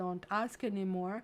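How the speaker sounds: ordinary delivery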